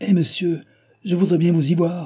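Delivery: high, frightened, alarmed tone. The postilion, losing control of the horses, answers the shouting traveller, alarmed. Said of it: "répondit le postillon effaré".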